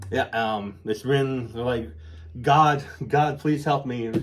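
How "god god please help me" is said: desperate, pleading voice. Retelling a movie scene, acting out a victim: imitating a desperate plea. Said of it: "she's begging".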